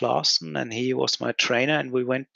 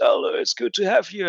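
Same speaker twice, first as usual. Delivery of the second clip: big, hearty, booming voice, pitched up; 7 semitones higher than usual. Retelling getting off the train and being greeted by President Reens, booming voice. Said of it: "with his booming voice".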